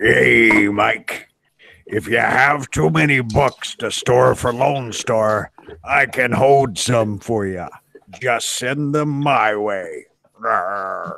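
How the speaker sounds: put-on pirate-style voice. Speaker reads a viewer's super chat aloud, in a pirate voice. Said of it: "Let me see if I can do this in a pirate voice".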